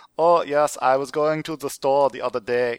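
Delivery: over-the-top, hammed-up German accent. Showing how to over-exaggerate an accent when speaking German: exaggerated German accent. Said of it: "if I'm speaking German, I can say".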